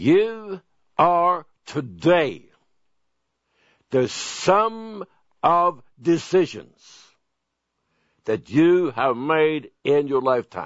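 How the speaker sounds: very slow, deliberate delivery, each word spaced apart. Speaker making a point for listeners to remember, speaking slowly. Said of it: "I'm going to speak slowly".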